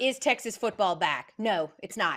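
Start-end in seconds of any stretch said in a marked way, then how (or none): none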